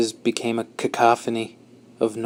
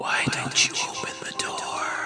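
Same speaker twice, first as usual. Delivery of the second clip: soft, hushed whisper, barely there. A voice behind a door speaks to the narrator holding it shut; quiet, whispery. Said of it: "just a quiet, whispery voice".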